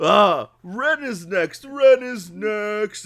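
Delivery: very high, loud, squealing, drawn-out ogre bellow. Voicing an ogre who announces who is next: ogre voice. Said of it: "the ogre goes".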